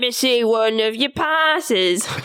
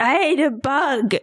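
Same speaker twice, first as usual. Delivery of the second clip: slow, silly, goofy put-on voice. Speaking as a disguised devil to guards at a door: silly voice. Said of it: "you're doing a silly voice".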